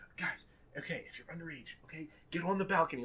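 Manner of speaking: play-acted, flustered, frantic, freaking-out voice. Retelling two girls telling minors to hide: imitating someone freaking out. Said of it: "these two girls start get freaking out".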